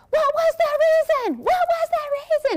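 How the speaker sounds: frantic, shrill, very high screaming. Retelling a realtor's reel, imitating her screaming into her phone. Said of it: "she was screaming into her phone".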